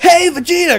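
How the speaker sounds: calling out, pitched way up. Retelling an imagined scene of Goku interrupting Vegeta's cooking show, in Goku voice. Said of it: "And Goku's like".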